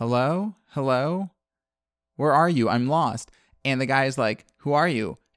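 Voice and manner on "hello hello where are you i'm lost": put-on little child voice. Retelling a scene where a man hiding in a closet hears a voice, small child's voice. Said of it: "he hears this small child's voice being like".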